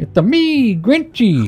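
high-pitched, slow, stretched-out video-game voice. Comparing a teleport pipe to a game, saying the Grinch line as Mario. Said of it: "What a great Grinchy".

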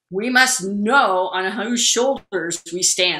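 very loud, big, booming lecturing voice. Recall the man who taught you the history of the field, imitating a booming voice. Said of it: "I can remember his booming voice".

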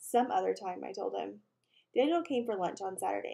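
plain reading voice

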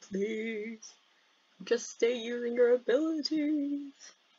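eerie, spooky ghost-like voice. Talking to themselves while playing a game, in a ghostly voice. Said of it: "I don't know why I'm talking like a ghost".

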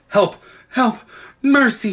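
faint, feeble, high, weak cry. Narrating a story, the witch cries after the fleeing children in a faint voice. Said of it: "cried the witch in a faint voice".

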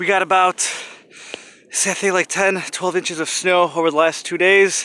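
out of breath. Vlogging after trekking through fresh snow, a little out of breath. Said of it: "I'm a little out of breath here".

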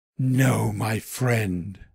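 hushed whisper. Reading a children's story, the weasel answers the rabbit: whispered. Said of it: "she whispered".

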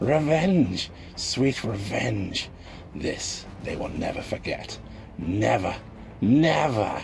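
frenzied, spiteful, drawn-out deranged raving. A deranged man gloats while dancing wildly, raving with malice. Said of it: "deranged ramblings had risen to a frenzy of malice and spite".

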